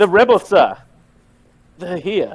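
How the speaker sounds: vintage British movie dialogue delivery. Retelling an impression of British cinema, acting out a film scene: imitating British cinema. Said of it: "Eddie Izzard has the perfect impression of, of British cinema".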